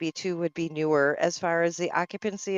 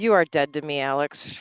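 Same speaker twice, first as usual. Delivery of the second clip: scornful, disdainful, contemptuous tone; 3 semitones lower than usual. Jokingly scolding another speaker for stealing the thunder: mock disdain. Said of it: "The disdain, I could hear it in your voice".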